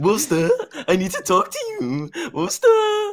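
mimicked, put-on calling-out voice. Retelling how another player called out in a meeting: imitating Dino's tone. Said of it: "That's how he sounded".

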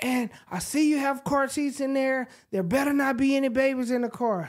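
high-pitched, screaming rant. Retelling how a police officer at the car window began: imitating an officer screaming. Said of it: "He immediately starts screaming in my ear".

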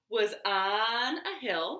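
ordinary delivery

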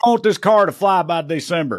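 put-on loud, demanding screaming. Mocking how Elon Musk orders workers around: imitating Elon Musk screaming. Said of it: "he screams at 'em like".

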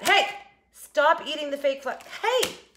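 high-pitched scolding yell. Stopping a cat from eating a fake plant: yelling at a cat. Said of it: "I have to yell at a cat".

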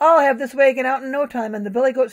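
ordinary delivery, nothing marked

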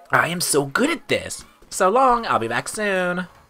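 put-on acted high girlish voice. Voicing a customer character in a shop game, girl voice. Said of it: "I need to get better at my girl voices".

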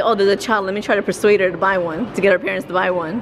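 usual speaking voice

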